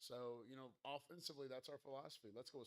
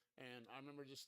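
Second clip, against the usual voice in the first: normal talking voice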